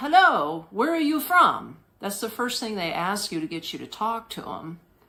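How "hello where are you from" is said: high-pitched, loud broken English. Recounting a woman who came up fast to start talking, imitating broken English. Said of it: "in her broken English".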